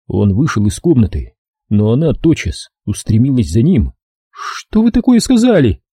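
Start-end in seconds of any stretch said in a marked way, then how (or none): 4.3-5.7 very high, startled, frightened cry. Narrator reading a novel, a woman following a man out of the room: frightened cry. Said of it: "испуганно вскрикнула она".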